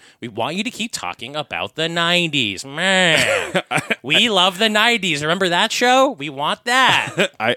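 high, loud, obnoxious, demanding superfan voice. Speaker mimics their show's small fan base, imitating annoying fans. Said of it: "This is my impression of our annoying small fan base".

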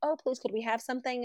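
mock, soft, super-sweet, sugary pleading tone. Retelling how she begged at rich people's homes, mock super-sweet. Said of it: "super sweet".

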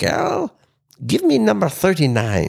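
put-on heavy German accent laid on thick, high and swooping. Retelling what a man said to people he worked with: thick German accent. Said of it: "he had a very thick German accent".

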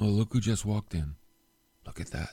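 stage whisper, under the breath, gossipy half-whisper. Acting out half-whispering to the person next to you: imitating a half-whisper. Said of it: "whisper to the person next to you".

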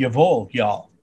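put-on Texas drawl, broad vowels on "y'all". Showing how a phrase would sound in a Texas accent. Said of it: "with a Texas accent, it would be like".

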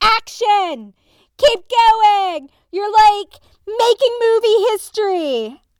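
all-out, high-pitched screaming. Retelling how someone kept urging the crew on during chaos: imitating someone screaming. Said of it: "he was just screaming".

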